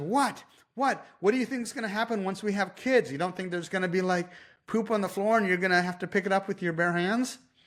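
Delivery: put-on indignant defensiveness. Retelling a woman turning on the man beside her, mock-defensive retort. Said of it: "gets defensive towards him, and she says".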